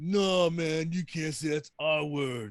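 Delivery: put-on caveman impression voice. Quoting the actor's old Geico Caveman role: Geico Caveman impression. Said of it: "He was like".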